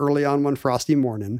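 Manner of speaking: normal talking voice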